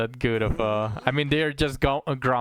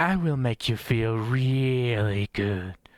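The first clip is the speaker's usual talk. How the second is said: put-on, imitated female voice. Playing a game, the streamer voices an NPC's line, imitating a female voice. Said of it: "trying to imitate uh, or or copy a female voice".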